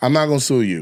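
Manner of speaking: usual speaking voice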